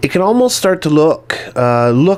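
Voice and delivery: look stressed hard, pitched high. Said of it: "and I stress the word look".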